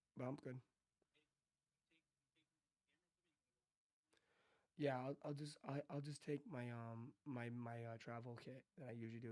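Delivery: hoarse, worn-out voice. Talking on a call while resting the voice: voice is shot. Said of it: "My voice is shot".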